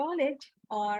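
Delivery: plain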